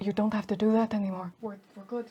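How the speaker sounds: very low, very quiet dropped murmur. Narrating the scene to the players, voice the speaker in a very low tone. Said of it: "just in a very low tone".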